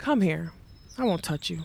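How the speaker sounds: plain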